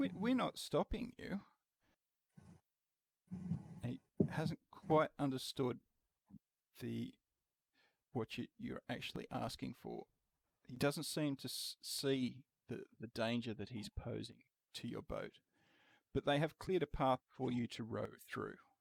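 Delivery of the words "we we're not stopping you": high-pitched, puzzled merman voice. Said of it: "he looks a little puzzled and says".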